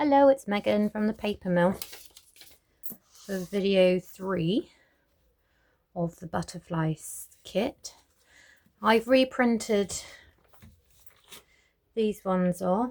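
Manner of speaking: slow, winded, breathless, out-of-breath delivery. Introducing a butterflies kit video after going up and down the garden, out of breath. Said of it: "I'm a bit out of breath".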